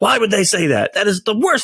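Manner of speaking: put-on irritated tone. Acting out someone in a bad mood at work: imitating an irritated person. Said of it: "now you just wanna punch that person in the face".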